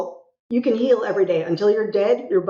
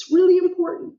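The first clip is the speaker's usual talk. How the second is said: very high voice catching, choked up near tears; 10 semitones higher than usual. Speaker stressing something that really matters to them, holding back tears. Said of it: "I'm trying not to cry right now".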